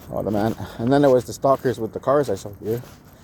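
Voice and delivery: ordinary delivery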